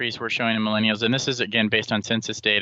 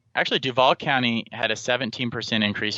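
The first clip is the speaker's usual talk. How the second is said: plain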